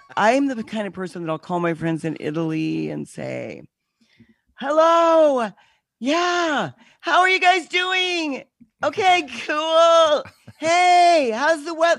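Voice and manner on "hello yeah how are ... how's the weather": very high-pitched, loud shouting. Speaker acts out calling friends in Italy, retelling own phone yelling. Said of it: "asking you why you're screaming".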